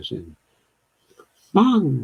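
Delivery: high-pitched tone on Hmong. Trying out a listener's pronunciation tip: high-pitched tone. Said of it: "said with a high-pitched tone".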